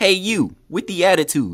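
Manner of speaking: video game announcer voice. Retelling a scene, Rock Lee calls out in a Wii Sports announcer voice. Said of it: "Sounding like the Wii Sports announcer".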